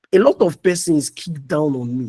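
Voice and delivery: ordinary talk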